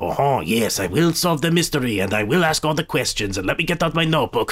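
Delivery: ridiculous storybook sleuth voice. Describing an actor's performance in a movie, doing his Poirot voice. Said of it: "he's doing the Poirot voice and being like".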